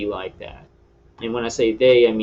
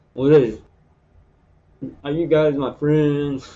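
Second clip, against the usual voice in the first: put-on distorted mouth voice, higher; 5 semitones higher than usual. Joking to viewers to show how the mouth can still talk: talking with mouth held oddly, as a joke. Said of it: "I can still talk with my mouth like this".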